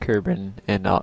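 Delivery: voice cracking. Narrating a time warp while in orbit: voice crack. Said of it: "oh jeez, voice crack".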